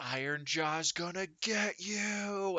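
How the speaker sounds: rising, high, drawn-out shrieking scream. A figure shouts from inside a burning building, screaming. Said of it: "you hear screaming from inside".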